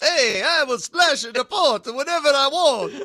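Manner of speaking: loud, very high-pitched vampire accent. Asked whether you can even do an Italian accent, trying one: Count Dracula-like accent. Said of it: "That sounds like Count Dracula".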